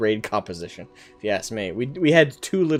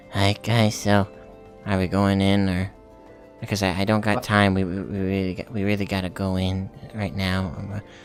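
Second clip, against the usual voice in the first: put-on very quiet voice, lower and slower; 6 semitones lower, 5 dB quieter than usual. Recalling a raid member he hated on TeamSpeak, imitating his very quiet voice. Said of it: "He would talk like that, so quiet".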